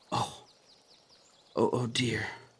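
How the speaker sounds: distant, faint, barely audible voice. Narrating Rin going pale as her teacup shatters: distant, faint voice. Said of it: "Her voice is distant, hard to hear".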